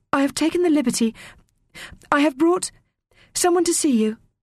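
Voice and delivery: very high, halting, stammering voice. Asked to eat up and tell about the archives, the child replies, stammering. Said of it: "Teo stammered".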